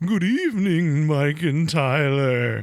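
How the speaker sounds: spookiest, eerie haunted-house voice. Reading a listener's email aloud, as it asks, in a spooky voice. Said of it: "this is reading your spookiest voice".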